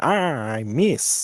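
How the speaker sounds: loud, big, cartoony voice. Showing another player how to say a line: Wario voice. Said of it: "you have to say it like Wario".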